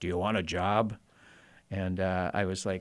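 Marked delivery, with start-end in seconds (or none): 0.0-1.0 very gruff, intimidating voice. Recalling an intimidating store owner, the speaker imitates his very gruff voice. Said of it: "his very gruff voice".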